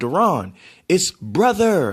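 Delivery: put-on prim British accent. Speaker recalls Uncle Mike correcting how he says brother: imitating Uncle Mike's prim British accent. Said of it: "the primpish kind of British accent".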